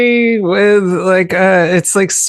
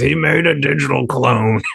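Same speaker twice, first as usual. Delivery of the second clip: put-on voice, rough and creaky; 5 semitones lower, 4 dB quieter than usual. Joking about a movie's digital clone in an Alex Jones voice. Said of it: "my Alex Jones voice".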